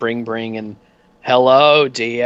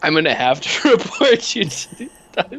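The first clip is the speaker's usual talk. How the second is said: high, giggling through words, fighting a straight face; 7 semitones higher than usual. Voicing an official who reports a bribe attempt, laughing while talking. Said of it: "hard for me to keep a straight face".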